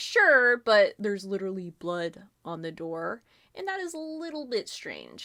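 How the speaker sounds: condescending and a bit irritated. Retelling how Sir Knot answered the others, in a mock-condescending tone. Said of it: "He was being kind of condescending".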